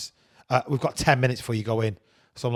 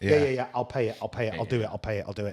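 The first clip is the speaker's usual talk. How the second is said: normal talking voice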